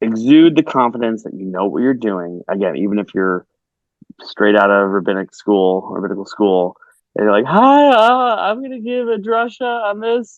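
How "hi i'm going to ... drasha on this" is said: put-on very high, slow, drawn-out cartoon teenager voice. Acting out a fresh rabbinical school graduate about to give a drasha, in a Simpsons teenager voice. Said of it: "Forgive my uh, Simpsons uh, teenager voice".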